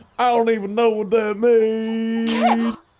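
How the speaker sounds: put-on shrill, booming, drawn-out country accent, very high. Showing how the other speaker imitated this line: mocking impression. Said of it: "This is you imitating me".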